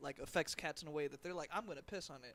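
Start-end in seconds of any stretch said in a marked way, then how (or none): none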